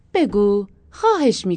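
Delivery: put-on very loud, babyish, spoiled-child wheedling voice. Pressing the driver to answer, she coaxes like a spoiled child.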